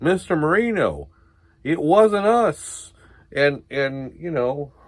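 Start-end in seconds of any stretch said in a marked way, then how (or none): 0.0-2.9 slow, high, stretched-out protesting voice. Retelling how an angry man yelled at them, imitating Kevin explaining. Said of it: "Kevin's like".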